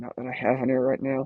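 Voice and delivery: muttered under the breath. Making a quick aside to the viewers: muttered under the breath. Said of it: "that was under my breath".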